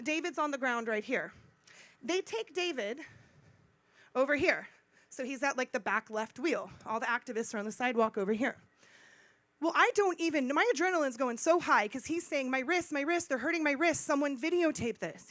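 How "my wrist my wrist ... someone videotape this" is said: ordinary delivery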